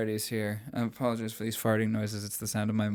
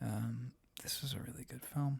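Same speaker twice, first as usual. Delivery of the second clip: hushed voice, very quiet; 11 dB quieter than usual. Talking about a film with another speaker, speaking very quietly. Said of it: "I'm speaking so quietly".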